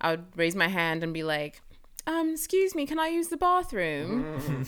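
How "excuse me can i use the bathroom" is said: put-on heavy British accent, pitched very high. Retelling raising a hand in middle school class, in a strong British accent. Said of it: "i had the strongest british accent".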